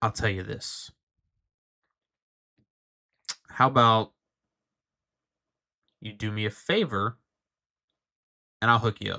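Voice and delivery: speaking softly in a whisper. Game master voicing a man making an offer to the three players: whispering. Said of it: "he looks at the three of you and he whispers".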